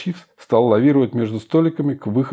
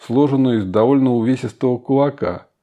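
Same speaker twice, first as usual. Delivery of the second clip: ordinary delivery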